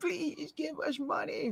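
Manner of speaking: very high, drawn-out tearful begging cry. Mocking a televangelist's begging-for-money cry: Tammy Faye Bakker begging cry. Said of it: "that Tammy Faye Baker begging for money cry".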